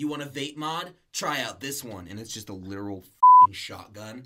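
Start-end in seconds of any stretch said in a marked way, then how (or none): 0.0-2.1 put-on dude character voice.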